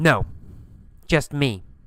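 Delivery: ordinary talk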